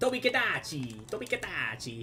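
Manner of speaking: Italian-accented speech. Saying a name over and over for laughs; Italian accent. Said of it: "Fucking Italian accent".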